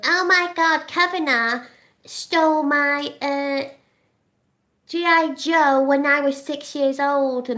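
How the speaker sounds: put-on high, very slow, drawn-out childish baby voice. Mocking a man in a wig impersonating Doctor Ford, in a baby-voice parody. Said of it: "doing the baby voice, going; he does all this kiddie voice like I do".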